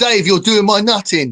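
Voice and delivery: put-on English accent. Imagining what an English-voiced phone says after wrong turns: imitating an English accent. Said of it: "an English voice".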